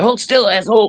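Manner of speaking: mock needling tease, pitched very high. Retelling a tattoo artist messing with a squirming customer: imitating someone teasing. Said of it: "Greg's just fucking with him".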